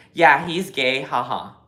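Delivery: ordinary talk, nothing marked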